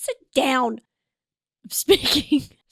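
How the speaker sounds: firm, authoritative, commanding in-charge tone. Joking about feeling in charge with hair up: mock authoritative voice. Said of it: "I feel a little bit, like, authoritative".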